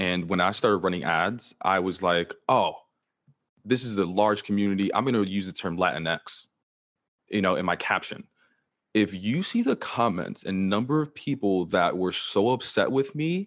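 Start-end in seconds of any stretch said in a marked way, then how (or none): none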